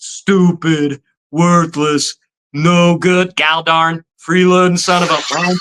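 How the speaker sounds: angry rant. Retelling the dubbed TV version of a movie scene: imitating Bender's father from the TV dub. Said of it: "and he's like".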